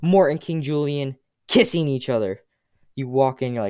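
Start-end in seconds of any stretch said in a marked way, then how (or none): none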